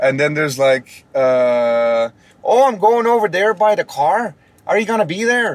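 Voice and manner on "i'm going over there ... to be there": put-on Minnesota accent, higher pitch and slower. Demonstrating regional American accents, doing a Minnesota accent. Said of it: "that's more like Minnesota".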